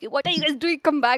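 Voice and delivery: mild, half-shouted yell. Retelling being spawn camped, calling the team back: imitating own scream. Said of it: "I screamed at my team".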